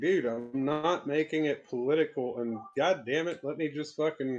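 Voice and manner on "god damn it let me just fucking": normal talking voice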